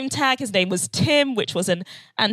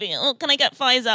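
put-on entitled manner. Retelling asking for a different vaccine, imitating a Karen asking. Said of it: "I sounded like a Karen".

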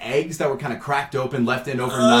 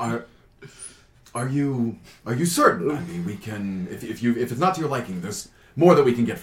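calm, composed, collected, soft-spoken manner; 4 semitones lower, 5 dB quieter than usual. Voicing the waiter Diego offering a guest another drink: calm, composed waiter. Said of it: "he just very calmly kind of collects himself".

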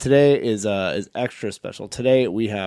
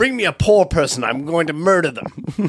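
high-pitched, slow, unhurried put-on British accent; 7 semitones higher, 4 dB louder than usual. Asked to say something as a royal on Undercover Boss: fake British accent. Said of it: "you're faking, like, a British accent".

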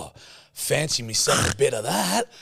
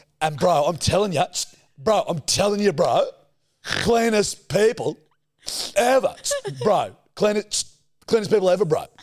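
put-on ranting voice with shushing, higher; 7 semitones higher, 3 dB louder than usual. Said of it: "That's such a good impression".

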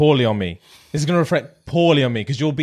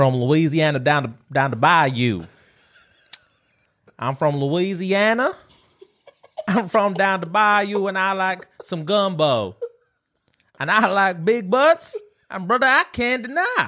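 high, put-on Southern American accent, fully committed; 6 semitones higher than usual. Improvising a character from Louisiana; Southern American character voice. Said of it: "You went into character".

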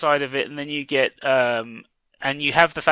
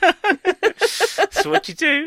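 very high, very slowly drawn-out words. Quoting a catchphrase in a John Oliver impression. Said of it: "as John Oliver would say".

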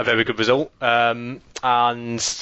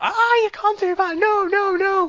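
mock shrill, very high, drawn-out shrieking. Retelling how Natalie reacted, unlike Jamie's grumbling, act it out, imitating Natalie shrieking. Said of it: "She'd start like shrieking".

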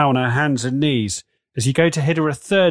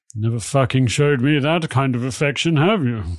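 put-on slurring drunk speech. Voicing Kato in a scene, drunk voice. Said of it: "Kato sounds drunk".

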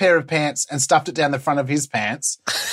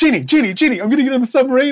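put-on excited politician voice, higher pitch; 9 semitones higher, 3 dB louder than usual. Imagining someone eager for a submarine photo: excited Scott Morrison impression. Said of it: "how excited he is".

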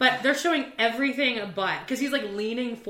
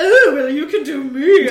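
very loud, high-pitched put-on camp voice; 5 semitones higher, 13 dB louder than usual.

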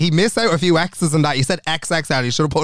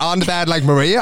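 plain

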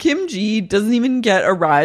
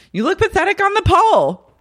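put-on scream, higher; 10 semitones higher than usual. Retelling the end of an argument: imitating someone screaming. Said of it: "screaming at her".

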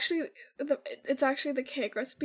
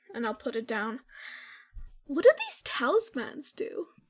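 plain

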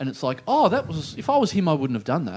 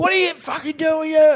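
put-on, very high, loud, full-on yelling; 12 semitones higher, 6 dB louder than usual. Retelling how a man in the speaker's car yelled at them, retelling a yell. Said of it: "so he's yelling at me".

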